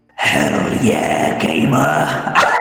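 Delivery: very deep, loud dragon voice. Asked by a co-host to say the gamer phrase: dragoniest dragon voice. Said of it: "in the dragoniest dragon voice you've got".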